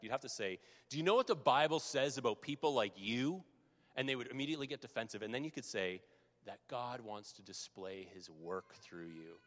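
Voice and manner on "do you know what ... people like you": slightly angry, raised voice with an edge. Demonstrating what to say to someone begging by the road, in a slightly angry voice. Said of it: "say it in a bit of a slightly angry voice".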